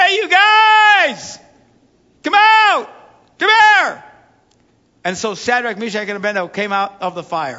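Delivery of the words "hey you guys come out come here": mock very high, very slow, drawn-out hollering shout. Retelling the story, Nebuchadnezzar calls the men out of the furnace: retelling a shout. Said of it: "And he shouts".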